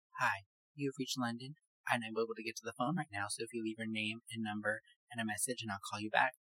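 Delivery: soft, proper, formal voice. Speaker imitates a woman's voicemail greeting, imitating London's proper voice. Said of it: "Sound all proper and stuff".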